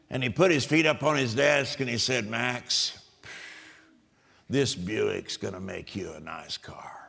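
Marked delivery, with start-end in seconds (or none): 2.2-6.9 put-on rough, low, gravelly old-man smoker's rasp. Recalling the old man who sold his dad a car; Red's gravelly smoker voice. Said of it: "a real gravelly voice because he'd smoked".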